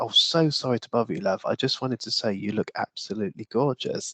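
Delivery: very gentle, soft-spoken, sincere manner. Retelling what a stranger at the bus stop said: imitating gentle-spoken speech. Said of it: "very gently spoken".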